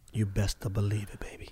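hushed, very soft, very quiet murmur. Replying to the other speaker, in a quiet late-night voice. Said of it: "That's my quiet late night voice".

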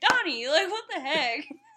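high, loud, fed-up, irritated angry outburst. Retelling a show scene, acting out Raphael getting all mad at another character. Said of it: "Raphael gets all mad".

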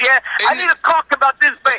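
put-on heavy Italian accent. Retelling what the father asked a young clerk: imitating father's heavy italian accent. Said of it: "he has the heaviest Italian accent".

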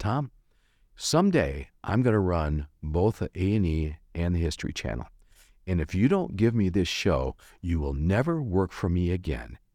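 put-on calm, even speaking tone. The speaker retells a man's words to him: imitating calm speech. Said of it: "Rob very calmly said to me".

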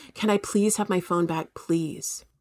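put-on pleading, begging tone. Retelling own past words: imitating own past begging.

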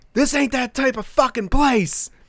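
play-acted, high-pitched, angry, full-throated hollering. Retelling how a dude yelled at him and his buddy, imitating the yelling. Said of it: "This dude's like yelling at us like".

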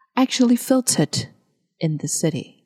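British English, every T hit hard. Showing learners the phrase in a British accent with strong T sounds. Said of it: "但如果你是用英国腔，记得T 要发得很重".

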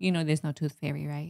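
put-on dry, expressionless, matter-of-fact deadpan. Imitating a child who will one day speak up: imitating a child speaking deadpan. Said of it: "he'll come over deadpan one day and be like".

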